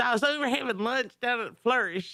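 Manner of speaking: exaggerated country accent. Quoting what Lloyd Sandifer says, the speaker uses an exaggerated country accent. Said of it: "I put a little too much hick in there".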